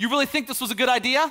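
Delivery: passive-aggressive, needling tone. Speaker explains how dads react to a child's messy room: imitating an agitated dad. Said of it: "they'll say it with an agitated voice".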